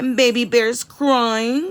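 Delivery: plain reading voice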